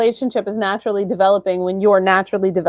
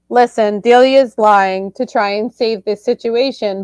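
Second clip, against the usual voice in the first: ordinary talk, nothing marked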